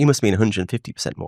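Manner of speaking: ordinary talk, nothing marked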